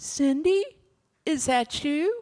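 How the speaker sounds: small, high, little calling voice. Retelling hearing someone call her name from near the street: Carol Payne's little voice. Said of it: "this little voice up near the street".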